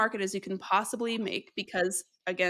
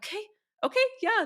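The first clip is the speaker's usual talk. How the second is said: panicked, flustered voice, higher; 13 semitones higher than usual. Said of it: "The waitress is, like, panicking now".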